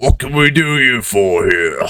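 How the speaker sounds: chittering, clicking crab voice. Voicing crab-people bouncers greeting the party: chittering, clicking crab-person voice. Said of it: "the chittering and clicking of their mandibles as they're speaking".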